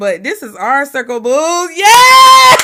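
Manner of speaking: slow loud swooping yell, "yes" stretched long. Ending a live stream with the sign-off phrase: yelling. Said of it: "I'm yelling and shit".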